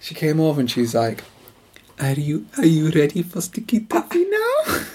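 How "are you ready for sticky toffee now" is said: put-on generic European accent. Retelling a woman coming over to ask them a question; generic european accent. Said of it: "It'll be more like a generic European accent".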